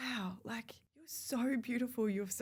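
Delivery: choked-up voice catching with emotion. Recalling old photos of herself, getting emotional. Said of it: "I'm gonna get emotional saying now".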